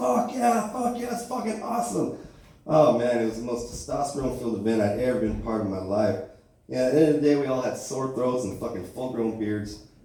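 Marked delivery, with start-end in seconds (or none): 0.0-2.1 mock high, shrieking, whooping crowd-like scream. Retelling recruits cheering at drill sergeants firing guns: imitating screaming. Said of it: "we're all screaming, like".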